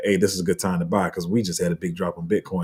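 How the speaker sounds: ordinary talk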